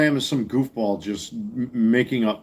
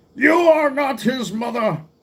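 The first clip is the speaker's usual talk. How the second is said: put-on old man voice, pitched very high; 14 semitones higher than usual. Speaker shows off a Star Trek line in an old man Jean-Luc Picard voice. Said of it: "old man Jean-Luc Picard voice".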